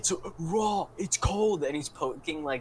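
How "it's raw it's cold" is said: raging, loud, slow, drawn-out head-chef screaming. Retelling a clip of a chef poking tuna: imitating Gordon Ramsay. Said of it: "I seen a clip where he's like".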